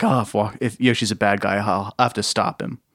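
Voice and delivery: ordinary talk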